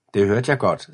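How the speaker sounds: plain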